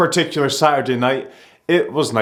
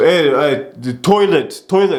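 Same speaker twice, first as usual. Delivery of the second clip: put-on Polish accent, halting and hesitant; 3 dB louder than usual. Retelling what a guy at the bar said: imitating a Polish accent. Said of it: "he was Polish just based off his accent".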